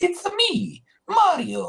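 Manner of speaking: very high, loud cartoon voice. Describing the voice invented for the game plumber: Mario voice. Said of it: "almost Mickey Mouse-like voice for Mario".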